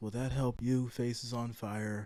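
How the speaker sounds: very quiet, dull, flat deadpan monotone drone. Answering a viewer's request to stop yelling: calm, boring voice. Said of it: "do you want me to talk like this?".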